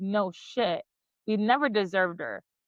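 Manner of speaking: ordinary delivery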